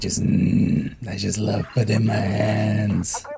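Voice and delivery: hoarse, rasping voice. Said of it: "My voice went super raspy there".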